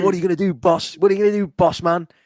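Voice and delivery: jeering, taunting shouted call-out. Retelling what a man kept shouting at Tanahashi, imitating someone shouting. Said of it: "he was just shouting stuff at Tanahashi".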